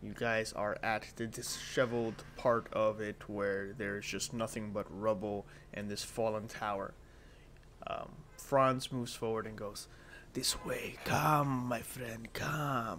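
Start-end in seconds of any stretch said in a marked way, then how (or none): 10.3-13.0 slow, sinister, coaxing voice. Game master voicing Franz beckoning the party forward, in a sinister Franz voice. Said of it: "But he does it very sinisterly".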